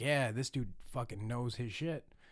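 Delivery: ordinary talk, nothing marked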